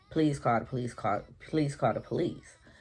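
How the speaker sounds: put-on tearful scream. Retelling begging for help at a house door, imitating a crying scream. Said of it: "I'm crying. I'm screaming".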